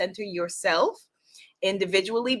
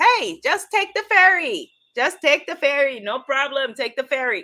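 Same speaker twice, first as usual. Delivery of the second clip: loud, clumsy, bad fake Trinidadian accent; 6 semitones higher, 5 dB louder than usual. Quoting people who recommend the ferry, the speaker uses a poor fake Trini accent. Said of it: "my poor Guyanese fake Trini accent".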